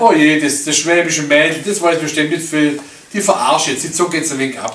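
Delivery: plain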